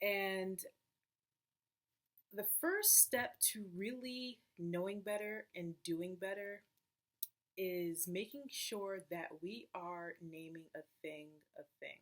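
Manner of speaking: slow, deliberate, each word drawn out. Speaker explains to viewers, talking slowly so they all get it. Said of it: "Notice I'm talking kind of slow".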